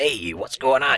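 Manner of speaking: raspy, loud, high voice. Recalling a toy figure, imitating a show's Sonic voice: scratchy Matt Piper Sonic voice. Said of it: "the scratchy voice that he".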